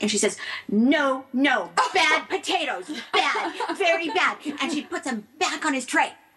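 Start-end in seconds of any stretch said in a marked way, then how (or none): 0.7-4.4 very slow, drawn-out, deliberate scolding tone. Retelling how a flight attendant answered a passenger: mock scolding the potatoes. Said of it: "like she's scolding the potatoes".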